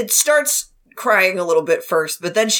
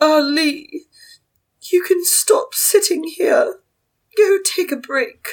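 put-on posh voice, much higher; 11 semitones higher than usual. Asked to do a posh voice for Madame Jean, posh Madame Jean voice. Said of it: "do your posh voice for Madame Jean".

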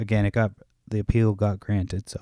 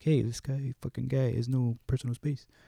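put-on talking like an old guy; 4 semitones higher, 9 dB quieter than usual. Retelling his own remark to a man, in a put-on old guy voice. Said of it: "I sound like an old guy".

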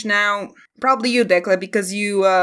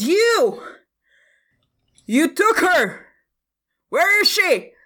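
furious shout, very high pitched; 9 semitones higher than usual. A narrator voices a man who drops his basket and points, yelling. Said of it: "he points a finger and he yells".

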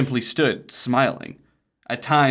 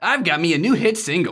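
pitched-up, high cartoon character voice; 6 semitones higher than usual. Reading a character's diary entry aloud: Sonic the Hedgehog voice. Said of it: "That's just Sonic the Hedgehog".

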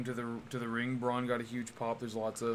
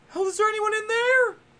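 very high, loud, put-on, vaguely woman's voice; 9 dB louder than usual. Retelling how he called into a porta potty, higher-pitched put-on voice. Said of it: "did a weird voice, like a vaguely woman's voice. It's like, just like a higher pitch".

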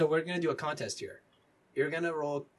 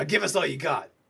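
rough, gruff delivery; 8 dB louder than usual. Narrating a tabletop game, voicing someone heard from the next car, gruff voice. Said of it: "you hear a gruff voice saying".

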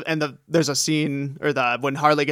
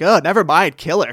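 put-on disgust, louder; 2 semitones higher, 5 dB louder than usual. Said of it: "gets this disgusted look".

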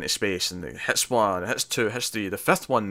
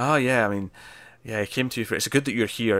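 put-on passive-aggressive delivery. Retelling what a character says after bad news, imitating a passive aggressive tone. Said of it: "passive aggressive way".

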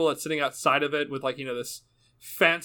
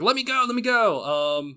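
high, desperate, drawn-out scream; 8 semitones higher, 4 dB louder than usual. Voicing a captive dragged down a hallway, screaming to be let go. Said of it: "screaming out".

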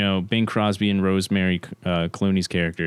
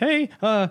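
nervous voice cracking very high. Imitating how a film actor sounds when nervous: Danny Kaye nervous voice crack. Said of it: "he'll do voice cracks and shit when he's just nervous".

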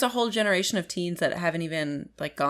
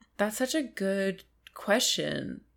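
sad-sounding voice; 2 semitones higher, 4 dB quieter than usual. Asked a question about first kisses on the podcast, answering sounding sad. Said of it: "You sound sad".

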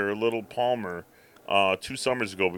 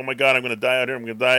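put-on cat-like crying, louder; 4 dB louder than usual. Speaker retells his cat's first time outside, imitating the cat crying. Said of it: "he's crying".

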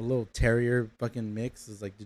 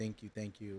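put-on tearful woman's voice, quieter; 12 dB quieter than usual. Retelling how a lady hugged them after the adoption: imitating a crying woman.

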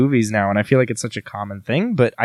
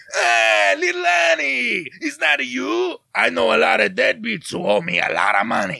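very high, creaky creature voice, swooping and rasping; 12 semitones higher than usual. Showing how lines land, the speaker performs for the others: Star Wars character voice. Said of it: "I'm going to do a Star Wars character for you now".

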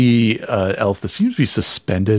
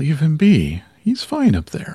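gentle, tender, soothing, reassuring sing-song voice; 7 semitones higher than usual. Voicing what someone hears in their head, gentle, comforting voice. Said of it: "it's just gentle, comforting voice".

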